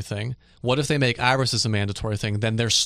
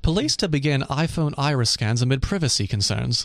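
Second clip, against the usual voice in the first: read with British accent; 3 semitones higher than usual. Reading a news headline aloud as a British person, British accent. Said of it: "So maybe I should read it as a British person".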